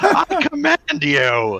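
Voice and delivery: put-on very high, swooping angry childish tantrum. Retelling a cartoon scene, voicing Terrorsaur angry like a child.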